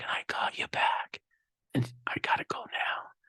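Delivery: soft, breathy whisper under the breath. Retelling a phone call with a wife at the hospital: imitating someone whispering. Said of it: "she's whispering".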